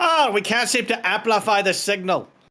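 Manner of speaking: put-on sudden Scottish accent, pitched very high. Playing a character whose recording spell plays back nothing, in a Scottish accent. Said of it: "I don't know why I suddenly turned so Scottish".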